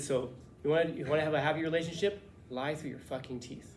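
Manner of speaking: usual speaking voice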